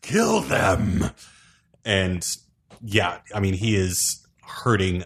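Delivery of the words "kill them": rough, pitched-up pained scream. Voicing a wounded enemy ordering an attack: screaming in pain. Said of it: "he just screams in pain and says".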